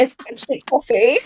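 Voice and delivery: attempted put-on British accent. Asked to say it again, a speaker repeats the line in an attempted British accent. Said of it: "say it again".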